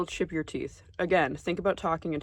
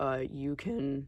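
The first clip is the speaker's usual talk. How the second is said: soft voice that cracks partway through; 3 semitones lower, 5 dB quieter than usual. Talking about oral piercings and teeth when the voice cracks. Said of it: "Nice voice crack".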